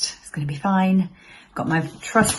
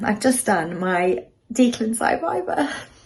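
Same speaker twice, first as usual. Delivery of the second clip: emotional, tearful, crying voice; 4 semitones higher, 3 dB quieter than usual. Having just finished a viva, the speaker announces it while crying. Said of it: "Can't stop crying".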